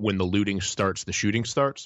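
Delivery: ordinary delivery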